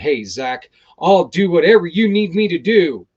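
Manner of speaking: loud, puffed-up, self-important delivery. Speaker acting out a reply, mock self-important. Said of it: "I wanted to sound a little self-important".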